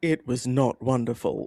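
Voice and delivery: put-on film voiceover narrator voice. Telling a story, the speaker slips into a Morgan Freeman voice. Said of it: "in a Morgan Freeman voice".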